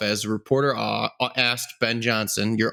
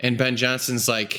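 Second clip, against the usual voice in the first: plain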